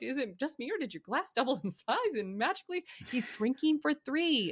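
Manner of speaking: high voice, talking through barely held laughter. Relaying what another person just said, laughing while speaking. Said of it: "I'm laughing right now".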